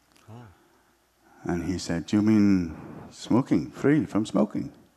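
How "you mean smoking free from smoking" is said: terrible, clumsy put-on Polish accent. Retelling what a Polish man said to the speaker, in a terrible Polish accent. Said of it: "that was my terrible Polish accent".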